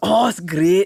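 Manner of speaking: put-on Scottish accent. Retelling what the police officer at a roadblock said: imitating a Scottish cop. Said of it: "And the cop was Scottish".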